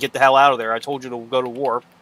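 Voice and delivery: ordinary talk, nothing marked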